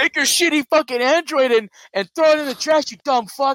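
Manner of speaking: mock very high-pitched screaming tirade. Retelling how a person screamed at a couple recording him: imitating Booster screaming. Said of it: "he started screaming at these people".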